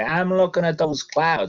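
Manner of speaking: botched Vermont farmer accent. Speaker playing a Vermont farmer answering a passerby, attempted Vermont farmer accent. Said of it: "that's not a Vermont accent".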